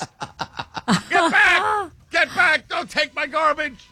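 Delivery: very high-pitched, loud yelling. Imagining chasing bears away from garbage in the woods; yelling at bears. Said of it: "while you're yelling at the bears".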